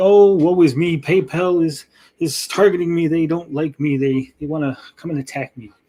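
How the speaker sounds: ordinary talk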